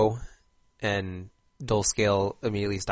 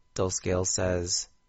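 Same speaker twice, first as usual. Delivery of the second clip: ordinary delivery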